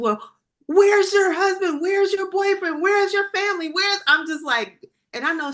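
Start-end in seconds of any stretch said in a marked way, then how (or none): 0.0-4.0 panicked, frantic, high-pitched barrage. Retelling asking a woman in labor questions: imitating own freaking out. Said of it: "now I just start freaking out".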